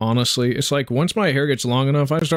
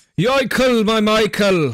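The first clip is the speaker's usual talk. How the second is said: put-on Irish accent with raised pitch; 8 semitones higher than usual. Saying the phrase after being asked to use the accent: Irish accent. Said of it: "You gotta say it in the accent".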